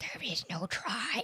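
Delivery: whispered. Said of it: "to quote Master Yoda".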